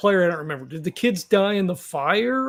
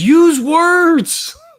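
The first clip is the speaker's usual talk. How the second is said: very high-pitched, loud shouting; 10 semitones higher, 7 dB louder than usual. Speaking in character to a fleeing figure: yelling in character. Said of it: "Macaron yells".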